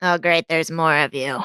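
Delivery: put-on surly, grumpy old voice. Voicing a surly old servant greeting the group: surly servant voice. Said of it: "she looks rather surly".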